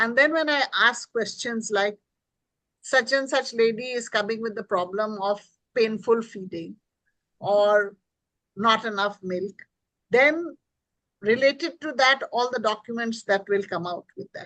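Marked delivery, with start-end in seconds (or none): none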